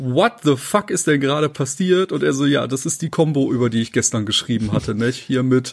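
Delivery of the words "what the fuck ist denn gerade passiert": put-on laughing disbelief, slower. Retelling own reaction when an enemy's health bars vanished in a game, laughing disbelief.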